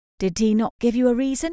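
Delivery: wary, worried, uneasy, apprehensive tone. First-person narrator asking a follow-up question, apprehensive. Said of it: "I ask apprehensively".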